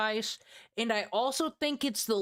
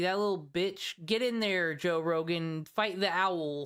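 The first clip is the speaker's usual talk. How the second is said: ordinary delivery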